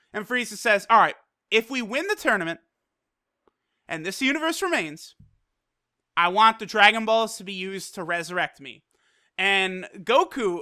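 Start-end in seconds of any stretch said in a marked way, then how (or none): none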